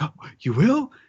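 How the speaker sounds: mock thrilled, super excited, eager, high voice. Retelling a scene where Momonosuke is offered an alliance: Momonosuke, super excited. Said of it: "super excited".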